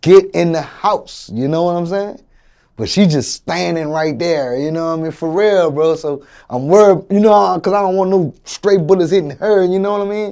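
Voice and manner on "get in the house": urgent, very loud, drawn-out screaming yell. Retelling a shooting, telling mom to get inside: imitating own past scream. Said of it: "I'm screaming at my mom".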